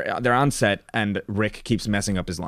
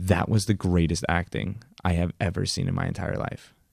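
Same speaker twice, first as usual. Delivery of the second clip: whisper, much lower pitch; 3 semitones lower than usual. Retelling a film scene where she speaks into Rick Dalton's ear: retelling a whisper. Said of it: "she whispers in Rick Dalton's ear".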